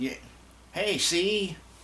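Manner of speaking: put-on wacky, old-timey nineteen-forties voice, very high. Describing a wacky character meant to be from the nineteen forties, 1940s character voice. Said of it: "supposed to be like some nineteen forties".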